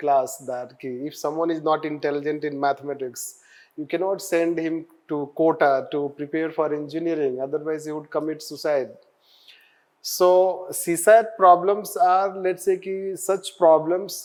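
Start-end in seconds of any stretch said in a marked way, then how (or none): none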